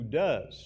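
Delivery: heavy emphasis on the word 'does'. Reading a bible verse aloud and commenting on it: emphasis on 'does'. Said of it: "emphasis on does".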